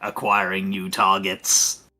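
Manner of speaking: little, flat, robotic voice. Describing a cannon swiveling around and speaking, in a little robotic voice. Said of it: "a little robotic voice comes out going".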